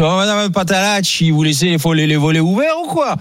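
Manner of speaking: put-on drawling accent from Nice.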